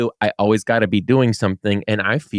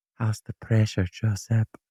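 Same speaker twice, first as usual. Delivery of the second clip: put-on whisper, quieter; 6 dB quieter than usual. Retelling what a massage worker whispered in the ear: imitating a whisper. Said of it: "whispers in my ear, and she goes".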